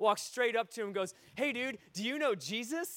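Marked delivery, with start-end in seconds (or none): 1.3-3.0 mock-enthusiastic, slower delivery. Retelling how a sixteen-year-old walked up to a man at his car, retelling an enthusiastic greeting. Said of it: "just that enthusiastic".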